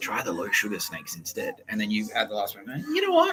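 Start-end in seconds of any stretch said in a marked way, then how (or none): 0.0-1.5 whispering. Acting out how someone spoke to you in the supermarket, whispered. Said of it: "she's whispered, like, going like".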